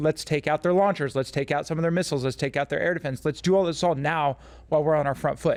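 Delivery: plain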